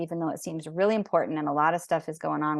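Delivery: fast, rushed speech. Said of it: "Ooh, I'm talking really fast".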